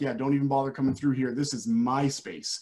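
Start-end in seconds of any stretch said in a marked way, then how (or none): none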